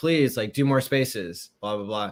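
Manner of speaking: normal talking voice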